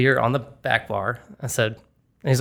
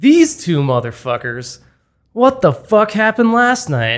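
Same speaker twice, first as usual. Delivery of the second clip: put-on loud, slow, stumbling drunken slurred outburst; 8 semitones higher, 8 dB louder than usual. Retelling what a drunk guy said to the two bartenders, imitating drunk slurring. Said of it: "I can hear him slurring".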